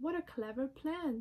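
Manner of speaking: ordinary delivery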